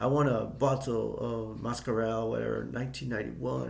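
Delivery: put-on, attempted French accent. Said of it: "trying to, like, say in a French accent".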